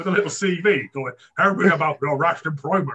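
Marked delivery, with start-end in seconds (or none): 1.4-3.0 comic, put-on talking dog character voice. Describing a dog in a little suit at an interview with a CV, in a dog voice. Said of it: "that's the dog voice".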